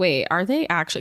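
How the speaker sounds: plain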